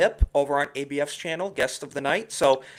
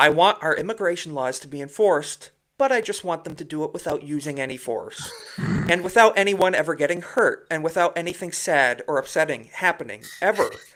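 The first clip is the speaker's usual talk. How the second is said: normal talking voice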